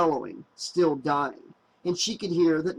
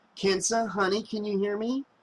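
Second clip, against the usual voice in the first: soft, gentle, coaxing; 4 semitones higher than usual. Reading a story aloud, a character coaxing a friend through a door: gentle asking. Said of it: "she asked gently".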